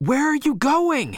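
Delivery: shouted, very high pitched. A man calls to his companion moving toward the trees, shouted. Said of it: "shouted Henry".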